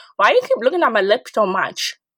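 ordinary delivery

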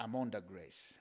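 very hushed, low, calm, intimate tone. Showing the congregation how to say the phrase, calm voice. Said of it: "say this in a calm voice".

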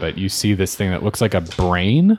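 ordinary delivery

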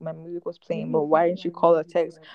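ordinary talk, nothing marked

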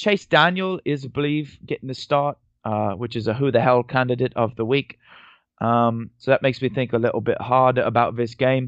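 mock British accent kept up throughout. Previewing the Bears game in London, the speaker does the whole read in a mock British accent. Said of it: "I'm just going to do the whole read here with this accent".

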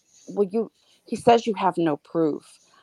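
normal talking voice

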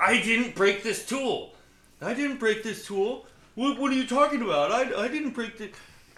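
acted, very defensive high voice. Retelling how someone denied breaking a tool: mimicking someone getting defensive. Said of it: "it gets super defensive".

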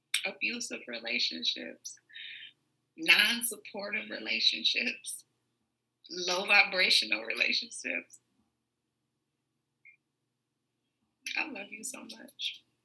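about to cry. Closing the show with a prayer to the universe, on the verge of tears. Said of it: "I'm about to start crying again".

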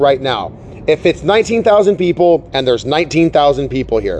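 ordinary talk, nothing marked

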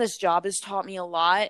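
ordinary talk, nothing marked

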